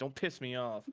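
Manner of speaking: angry in-character voice. Playing Virgil, who snaps at Valerie and storms off: angry in character as Virgil. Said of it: "And Virgil will storm off".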